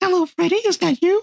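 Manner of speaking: thin, very high falsetto head voice. Retelling a man in a wig phoning room two oh six, high falsetto voice. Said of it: "he raises the pitch of his voice".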